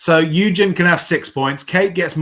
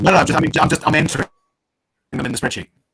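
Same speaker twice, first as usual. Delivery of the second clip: speaking very fast. Explaining that scores are being entered in the spreadsheet: speaking very fast. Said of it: "is Rez speaking very fast?".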